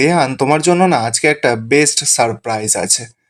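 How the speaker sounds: ordinary talk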